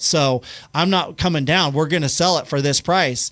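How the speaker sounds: usual speaking voice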